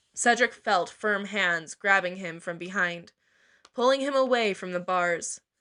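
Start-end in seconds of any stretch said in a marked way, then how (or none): none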